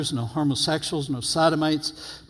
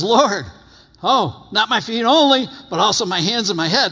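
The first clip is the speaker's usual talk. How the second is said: all-excited eager outburst, high and loud; 6 semitones higher, 6 dB louder than usual. Acting out Peter's reply to the Lord: imitating an excited Peter. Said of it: "He gets all excited".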